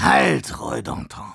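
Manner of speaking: sibilant, hissing cry, called out. Narrator reading an armored soldier raising his hands in defense, hissing call. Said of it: "rief er in zischelndem Interkosmo".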